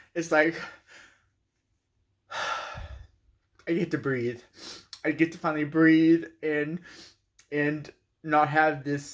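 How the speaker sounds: happy crying, tearful with joy. Speaker thanking everyone while sharing good news, crying happy tears. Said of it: "I'm crying because I'm happy".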